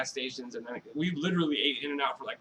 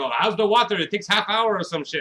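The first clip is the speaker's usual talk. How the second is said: odd, put-on Russian accent, pitched up; 6 semitones higher, 7 dB louder than usual. Retelling a guy who came out to them at the hot tub, weird Russian accent. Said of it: "has this weird like Russian accent".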